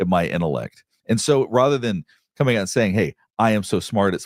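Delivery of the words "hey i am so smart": ordinary talk, nothing marked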